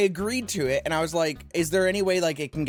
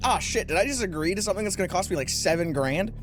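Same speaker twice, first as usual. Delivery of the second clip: ordinary delivery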